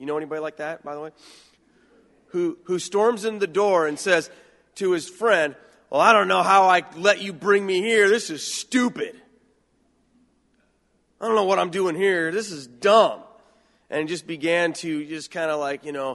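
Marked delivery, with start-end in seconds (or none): 5.9-13.2 put-on arrogant, brash teenage voice, loud. Retelling how a teenager stormed into church: imitating Mike as a loud, arrogant, brash teen. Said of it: "this loud, arrogant, brash seventeen-year-old kid".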